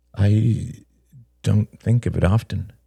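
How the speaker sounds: murmuring. [name] answers Peter's question: murmured. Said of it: "murmured [name]".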